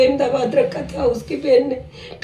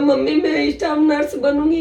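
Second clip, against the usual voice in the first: usual speaking voice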